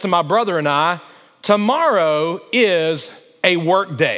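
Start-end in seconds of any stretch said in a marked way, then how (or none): 1.4-4.2 announcer-style delivery. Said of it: "my dad would announce".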